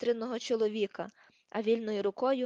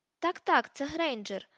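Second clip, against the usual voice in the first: exclaiming at a higher pitch; 4 semitones higher than usual. Lucius confirms that the captive girl is Granger, exclaiming. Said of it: "вигукнув Люціус".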